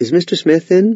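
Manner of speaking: high, timid, unsure, weak salesperson voice.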